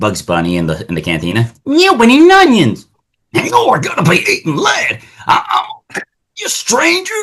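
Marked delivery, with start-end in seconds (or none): 1.6-7.1 put-on cartoon cowboy voice, higher. Acting out a cartoon cantina scene, Yosemite Sam voice. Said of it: "It's like".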